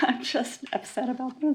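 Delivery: soft, upset, emotional voice with laughter through words.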